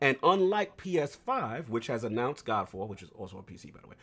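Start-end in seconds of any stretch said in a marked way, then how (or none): 2.9-3.9 much quieter, lower and faster. Discussing next-generation consoles with another speaker, saying a side remark quietly. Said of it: "Why you said that so low?".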